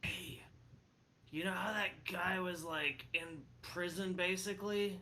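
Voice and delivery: secretive, hushed half-whispered stage whisper. Half-whispering over to a turtle companion: half-whispering. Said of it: "Can I whisper".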